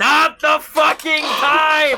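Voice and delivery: very high scream, drawn out in time. Gam, pestered by someone pleading, screams down the hallway. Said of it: "screams down the hallway".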